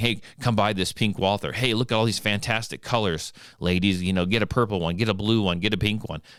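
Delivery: ordinary talk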